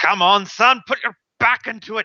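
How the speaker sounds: high-pitched female dwarf character voice. A game master voicing a female dwarf urging on a player being pulled out: female dwarf voice. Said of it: "a female dwarven voice".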